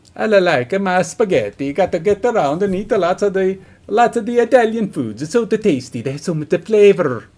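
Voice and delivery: put-on Italian accent. Trying out accents for listeners, speaking in an Italian accent. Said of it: "I can do Italian".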